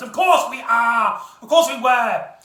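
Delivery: high, loud shout. Retelling a quarrel scene, the Doctor's reply: imitating someone shouting. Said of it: "And the Doctor shouts".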